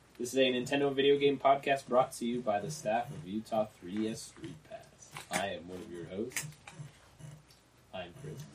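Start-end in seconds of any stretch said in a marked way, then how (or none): 2.1-8.3 very quiet, whispered put-on sexy sultry voice. Podcast host introducing himself: quiet put-on sexy voice. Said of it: "I was trying to do my sexy voice".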